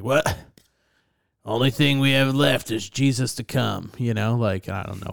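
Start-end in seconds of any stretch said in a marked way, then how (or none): 0.0-3.9 sudden, put-on West Virginia accent. Mid-conversation, the speaker slips into a deep West Virginia accent. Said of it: "I turned into just somebody like from West Virginia and like deep voice".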